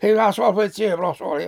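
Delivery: thick put-on Cork accent, laid on heavy. Retelling how a panto comic spoke on stage: imitating a strong Cork accent. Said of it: "such a strong Cork accent".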